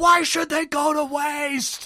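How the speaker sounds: very high, very loud, raging, furious scream. Retelling a father screaming back at his wife, retelling a furious scream. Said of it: "Frank just screams, just fury".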